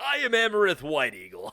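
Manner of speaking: swooping put-on character voice. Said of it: "don't do a voice".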